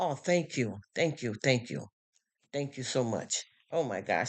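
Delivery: voice choked up, right on the edge of crying. Thanking someone who just complimented her, close to crying. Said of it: "Now you're gonna get me crying".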